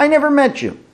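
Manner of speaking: indignant, high, sharp tone.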